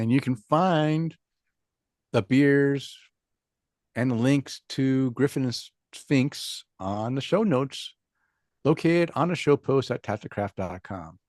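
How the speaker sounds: slow, deliberate, carefully paced delivery. Pointing listeners to the beers and links on the show notes: talking slowly. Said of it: "I'm talking slow right now".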